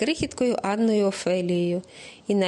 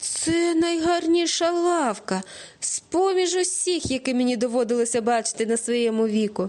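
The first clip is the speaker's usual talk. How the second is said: glad, joyful, exclaimed outburst; 3 semitones higher than usual. A father, his blindfold just removed, sees a bench and exclaims joyfully. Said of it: "радісно вигукнув тато".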